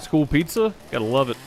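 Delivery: ordinary delivery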